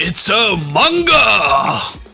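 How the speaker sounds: put-on Japanese accent. Discussing how to pronounce manga, one speaker tries a japanese accent. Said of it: "You can do like a Japanese accent".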